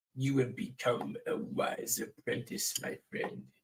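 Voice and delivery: whispered, hushed, breathy wise master voice. Speaker doing a voice for a friend, put-on master's voice. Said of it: "I can actually do that voice longer".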